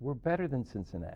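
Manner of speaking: ordinary talk, nothing marked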